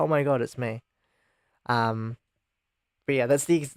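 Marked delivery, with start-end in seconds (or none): none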